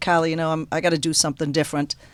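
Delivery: ordinary delivery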